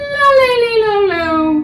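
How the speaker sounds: very high, loud la sliding down in pitch.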